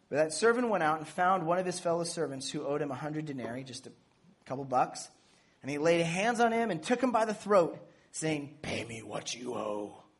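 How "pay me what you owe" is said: deep, dropped, put-on superhero voice. Reading a parable aloud, voicing the servant who demands payment: kind of like Batman voice. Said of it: "Kind of like a Batman voice".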